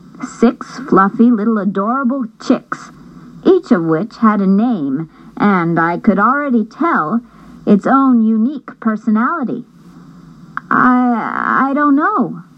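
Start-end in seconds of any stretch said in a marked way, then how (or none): 10.7-12.4 stammering, halting, stumbling over the words. The narrator, asked about the chicks, stammers a reply. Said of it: "I stammered".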